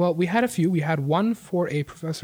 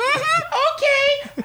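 irritating man's voice, very high-pitched; 4 dB louder than usual. Retelling a job expo, imitating an irritating voice. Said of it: "That's his exact fucking voice".

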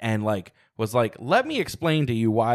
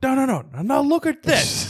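put-on very high childlike voice, gushing excitement, pleading. Retelling showing a trailer to someone: imitating own childlike excitement. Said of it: "childlike excitement".

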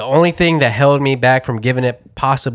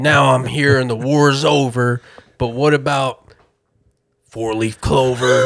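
mocking, deliberately clumsy delivery. Mocking lyrics that sound like someone just discovering rhyme: mocking a clumsy first-time rhymer. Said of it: "He's like".

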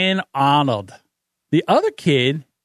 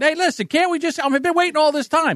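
mock exasperated, pleading shout at very high pitch; 9 semitones higher than usual. Retelling a driver yelling at a drive-through speaker: imitating a man yelling. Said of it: "So he starts trying to yell".

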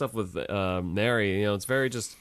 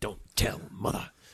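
low growling voice; 3 dB quieter than usual. Correcting another speaker on how the line was said, imitating a growl. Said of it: "he sounds like he's growling when he says".

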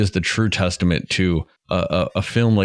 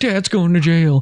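put-on very high, blurted-out childlike yell; 10 semitones higher, 4 dB louder than usual. Retelling a kid in the screening shouting a movie line: imitating a kid yelling. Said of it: "just yells out".

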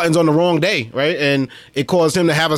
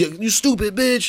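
mock yelling, much higher pitch; 6 semitones higher, 3 dB quieter than usual. Retelling a fight over a mask, acting out the truck driver: retelling a yelled insult. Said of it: "yelling match with this truck driver".

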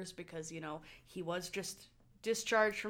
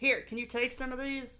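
flustered, pitched-up, swamped, overwhelmed voice; 5 semitones higher, 4 dB louder than usual. Retelling how Carter, with an armful of charts, asks Mark for help, do a Carter impression, completely at a loss. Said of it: "that's my Carter impression".

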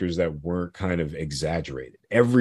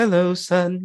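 very high stock mum voice; 13 semitones higher than usual. Listing a film's stock characters, speaker imitates the mother: stereotypical mother voice. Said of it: "the mother who's like the stereotypical".

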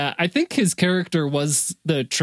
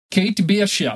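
put-on Russian accent; 4 semitones higher than usual. Asked about a line they keep repeating, the speaker gives it in Yelena's Russian accent. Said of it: "What is it that you keep saying in her accent?".

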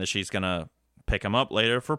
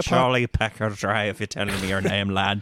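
put-on Irish accent. Trying to do an accent while others listen, in an irish accent. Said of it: "That's Irish".

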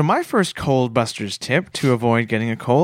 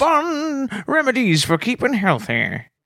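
put-on old grandmother voice, higher; 10 semitones higher than usual. Introducing home remedies for colds in a put-on grandma voice: grandma voice. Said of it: "like a grandma voice or something".

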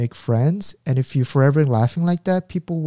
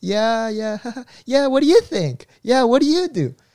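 very high, timid, nervous and unsure voice; 9 semitones higher than usual. Imitating how the other speaker used to sound in group meetings: imitating nervous junior with laughter. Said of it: "you sound like a junior".

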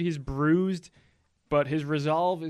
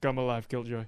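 put-on flat monotone, droning one note; 4 semitones lower, 5 dB quieter than usual. Quoting what a guy keeps saying, in a flat monotone imitation. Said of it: "In the most monotone voice of all time".

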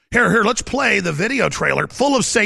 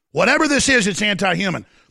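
plain

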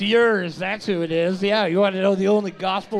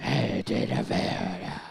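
whispered, breathy, monstrous would-be sultry voice; 13 semitones lower, 8 dB quieter than usual. Asked to use a sex voice, the speaker tries, in a failed sexy voice that sounds monstrous. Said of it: "That sounds like a monster".

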